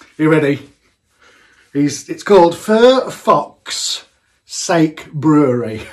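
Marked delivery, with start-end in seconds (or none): 1.7-5.8 very slow, deliberate, careful enunciation, word by word. Giving the name of a brewer's Facebook page, saying it slowly and carefully. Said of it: "I hope I said that slow enough".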